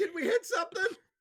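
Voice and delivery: shrill, very high, very loud yell. Voicing Alara, who shouts towards the front: Alara shouting. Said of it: "Alara just shouts towards the front".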